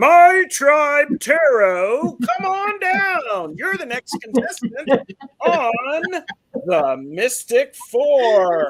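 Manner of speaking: very high, very loud, booming, swooping game-show announcer. Calling up the next person for a tarot reading, the speaker uses a game show announcer voice. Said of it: "It's like I'm an announcer".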